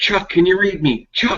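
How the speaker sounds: high, panicked, frantic calling out. Voicing a man calling out on the radio: frantic. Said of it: "he's, like, frantic".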